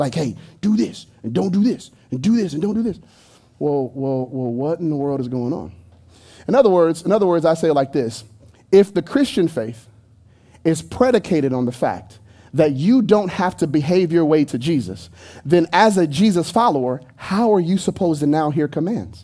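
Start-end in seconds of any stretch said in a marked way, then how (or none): 0.1-3.0 soft, quiet, threatening voice. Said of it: "kinda sounds like he's threatening you".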